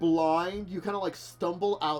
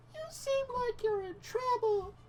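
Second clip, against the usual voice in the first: wee, piping, tiny butterfly voice, very high-pitched; 4 dB quieter than usual. Telling a story where a butterfly lands on your shoulder and speaks, in a tiny butterfly voice. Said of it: "you hear this tiny voice from it being like".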